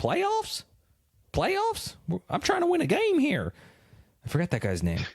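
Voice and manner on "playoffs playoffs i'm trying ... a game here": put-on very high, slow, sing-song, swooping Southern accent. Retelling a clip of a man answering about playoff chances, in a southern accent impression. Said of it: "He was like a Southerner".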